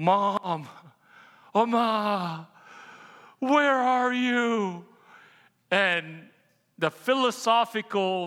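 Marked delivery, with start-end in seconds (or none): 0.0-4.8 desperate cry, very slow, drawn out, one word stretched. Retelling finding a note from his mom as a little boy: imitating crying out. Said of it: "crying out".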